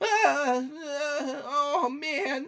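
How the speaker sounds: very high, very slow, drawn-out dismayed goblin voice. Voicing goblins reacting as one of them is shot: dismayed goblin voice. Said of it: "the goblin just kinda go".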